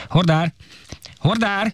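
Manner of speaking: high, loud, carrying shout. Narrator reads calling for a porter, shouting. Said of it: "Kiáltottam".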